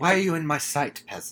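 mock-snooty, haughty old man voice. Quoting how he does his dad's dad's voice: mock-snooty grandfather voice. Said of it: "that's basically the dad's dad voice".

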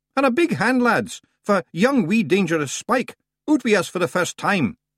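very high, loud call. Calling to the lads to welcome a newcomer: raised voice. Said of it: "He raised his voice".

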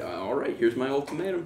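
ordinary talk, nothing marked

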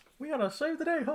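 very high, squeaky cartoon voice. Showing a co-host the voice Robert Downey Jr. would need to bring, Mickey Mouse impersonation. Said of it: "his best Mickey Mouse impersonation".

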